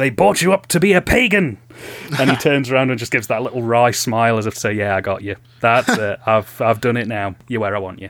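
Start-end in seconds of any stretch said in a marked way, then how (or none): 0.0-1.6 bawdy, full-throated bellow, pitched up. Describing a film scene where the lord bellows at Howie; Lord Summerisle's bawdy bellow. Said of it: "he sort of very bawdily bellows".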